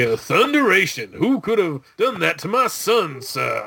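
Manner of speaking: put-on high, country Kentucky yokel accent. Voice Jonathan Kent speaking about his son, doing Jonathan Kent as a Kentucky yokel. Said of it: "make him like a Kentucky".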